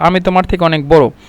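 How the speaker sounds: normal talking voice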